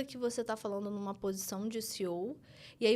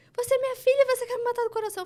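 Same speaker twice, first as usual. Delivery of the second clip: very loud, very high-pitched, shrill shout; 14 semitones higher, 11 dB louder than usual. Retelling a board meeting where the upset father yelled: imitating father shouting. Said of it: "Começou a gritar".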